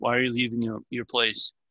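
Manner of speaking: put-on angry voice. Acting out a man angrily questioning an elderly man: retelling an angry question. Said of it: "in an angry voice".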